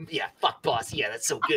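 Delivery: voice of a talking rat. Voicing the rat a listener overhears through a grate; rat voice. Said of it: "That was a fantastic like, rat voice".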